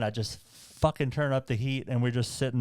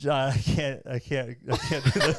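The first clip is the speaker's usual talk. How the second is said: mock almost-crying, desperate, near-tears pleading tone. Retelling own words to a hiking partner on a steep climb: imitating own near-crying plea. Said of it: "I'm almost crying".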